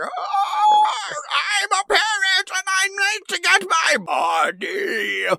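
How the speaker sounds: wild shouted cartoon villain voice, very high, all swoops. Comparing a movie parrot to a cartoon villain, mimicking it in a Krang voice. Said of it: "He sounds like Crane from Ninja Turtles".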